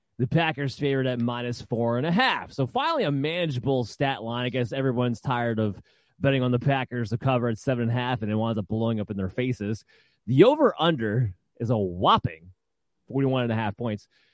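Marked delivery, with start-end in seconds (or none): 10.3-14.1 heavy dry sarcasm with swooping sing-song delivery. Reading out a betting line for a game: sarcastic tone. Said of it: "That's sarcasm, by the way, if you couldn't sense the tone".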